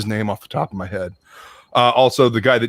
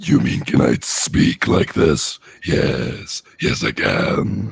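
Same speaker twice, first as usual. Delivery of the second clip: rough, creaky, raspy cartoon villain voice; 9 semitones lower than usual. Asked to do a full intro in that voice, the speaker shows it: Mumm-Ra voice. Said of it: "That's like Mumra".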